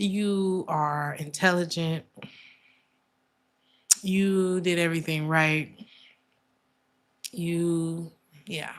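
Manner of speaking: slow, choked-up, drawn-out "you", near tears. Reassuring a listener that it is not their fault, the speaker is about to cry. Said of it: "I'm about to cry".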